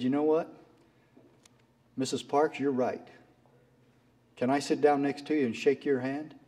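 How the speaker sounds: usual speaking voice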